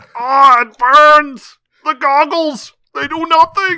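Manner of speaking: very loud, high-pitched, slow, drawn-out shout. In an episode full of such impressions, do one more Arnold Schwarzenegger impression. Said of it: "way more Arnold Schwarzenegger impressions".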